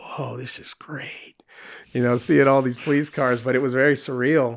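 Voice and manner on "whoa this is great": whispered, slow, drawn-out, awed, amazed delight. Retelling a surreal scene on the freeway as Kevin from Home Alone. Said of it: "kind of felt like Kevin from Home Alone".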